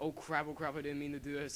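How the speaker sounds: ordinary talk, nothing marked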